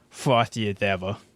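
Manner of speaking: put-on New York or Boston accent. Quoting the bartender in a commercial: New York or Boston accent. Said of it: "a New York or Boston accent".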